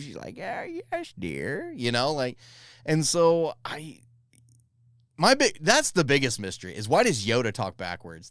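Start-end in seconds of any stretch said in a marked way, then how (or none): 0.4-1.7 put-on high-pitched old woman voice. Imitating Yaddle talking normally: Yaddle as an old lady on a stoop. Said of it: "like an old lady on a stoop".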